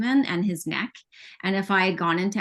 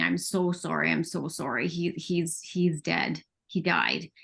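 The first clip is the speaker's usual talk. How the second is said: acted crying, slow halting words through tears; 2 semitones lower, 3 dB quieter than usual. Retelling what was said to husband and mom after the news: retelling own crying words. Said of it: "I just remember crying and saying".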